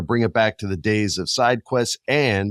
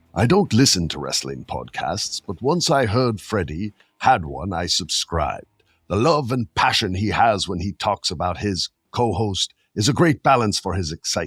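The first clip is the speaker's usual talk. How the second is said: clumsy, unconvincing put-on elderly man's voice; 2 semitones lower than usual. Reading out a message from a girl, in a bad old-man voice. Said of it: "I got a bad one".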